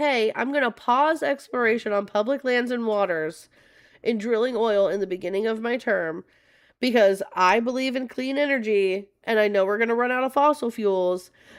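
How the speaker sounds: ordinary talk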